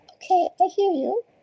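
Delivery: very high, small kitten voice. A tarot reader, relaying what her cat says, answers in a little kitty voice. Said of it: "in my little kitty voice".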